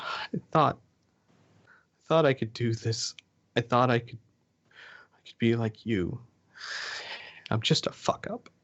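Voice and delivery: tearful, sobbing while talking. Narrating a scene, a woman looks up in tears and speaks: tearful. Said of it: "she's in tears".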